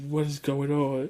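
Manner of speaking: put-on panicked, frantic disbelief, losing control. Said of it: "So [name] was freaking out".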